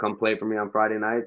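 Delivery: ordinary talk, nothing marked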